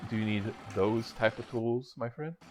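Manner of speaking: soft, low, hushed, under-the-breath half-whisper. The DM voices Treen speaking to a player: Treen's low half-whisper. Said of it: "speak in like a low whisper".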